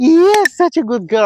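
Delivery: very high-pitched, gushing, excited voice. Speaker praises the dog for sitting down, very high-pitched voice. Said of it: "I'm using a very uh, high pitch voice".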